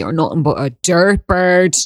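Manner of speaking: put-on Dublin Irish accent. Explaining how a phrase must be said, demonstrating it in a dublin accent. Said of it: "you have to use it with a Dublin accent".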